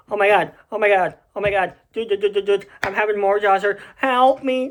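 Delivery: put-on panicked voice. Retelling the morning of jaw surgery: imitating own peak panic. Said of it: "in peak panic".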